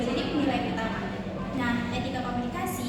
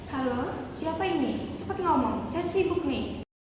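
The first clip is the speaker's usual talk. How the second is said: rude, impatient, dismissive, impolite tone; 3 semitones higher than usual. Demonstrating the wrong way to answer a work phone call: rude phone greeting. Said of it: "contoh yang salah, tidak sopan".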